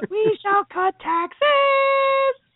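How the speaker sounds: very high, weird falsetto, "taxes" drawn out. Imitating a campaign line from him: imitating a weird falsetto. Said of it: "It's all in this weird falsetto".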